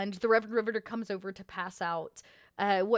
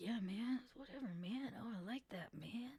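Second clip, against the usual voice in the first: very quiet slangy muttering under the breath; 16 dB quieter than usual. Voicing musicians in the corner, muttering under their breath: muttering in jive speak. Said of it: "They're muttering, kind of, you know, uh, under their breath, like, you know, jive speak".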